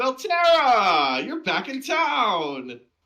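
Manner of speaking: very loud, very high, booming holler with town drawn out. A character walks toward the listener and yells a greeting, yelling. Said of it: "He yells, maybe a little bit louder".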